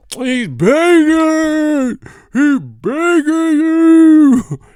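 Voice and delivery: eerie, very high, drawn-out spooky ghost voice. Describing a tap dancing clip to friends, in a spooky ghost voice. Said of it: "why are you talking like a ghost".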